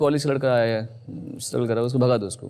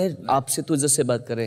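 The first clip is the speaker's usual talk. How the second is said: plain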